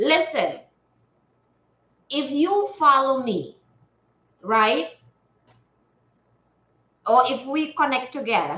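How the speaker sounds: talking with mouth full. Speaker addresses a viewer who just joined, talking while eating. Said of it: "I was eating and it's so delicious".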